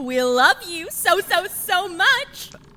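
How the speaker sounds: loud, rising, doting cheer, overbearing. A mother cheers on her son so everyone around can hear: loud voice. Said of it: "Just lower your voice".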